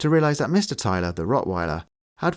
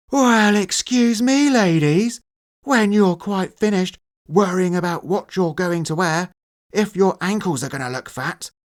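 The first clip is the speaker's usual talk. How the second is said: very high, sneering, mocking shout; 11 semitones higher, 4 dB louder than usual. A furious coach shouts at his team before a championship match: mocking yell. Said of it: "he yelled in a mocking tone".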